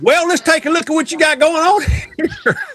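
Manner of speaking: put-on high-pitched voice with Southern accent. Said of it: "he understands about the Southern accent".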